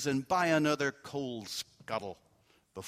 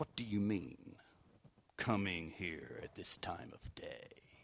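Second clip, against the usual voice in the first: very low, soft, hushed gruff growl; 7 semitones lower, 11 dB quieter than usual. Narrating, reading Scrooge's line to Bob, who arrived late: growling. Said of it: "growled Scrooge in his accustomed voice".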